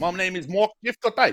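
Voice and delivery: put-on New Zealand accent slipping into South African. After recommending a YouTube channel, attempting a botched Mark Jeffcott Kiwi accent. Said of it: "it went South African".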